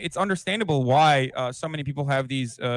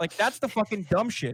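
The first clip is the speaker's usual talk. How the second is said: usual speaking voice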